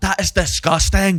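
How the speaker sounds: put-on Scottish accent. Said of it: "That is how I have to do the Scottish accent".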